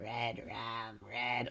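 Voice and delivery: really croaky voice, words croaked out. Imitating Danny picking up the knife: croaky Danny voice. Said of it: "when his voice reaches that really, like, croaky level".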